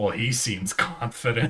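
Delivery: put-on muttering under the breath. Retelling a remark heard over a call: imitating someone muttering under their breath. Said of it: "someone under their breath go".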